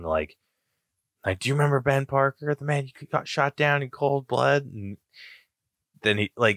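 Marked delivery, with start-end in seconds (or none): 1.4-4.6 put-on high-pitched yelling. Retelling a movie fight scene: imitating Spider-Man yelling. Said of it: "Spidey's yelling".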